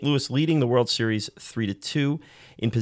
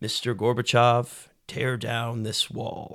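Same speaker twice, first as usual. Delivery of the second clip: put-on elderly statesman-like voice; 3 dB quieter than usual. Quoting a famous presidential line: Ronald Reagan impression. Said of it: "better, uh, Reagan impression".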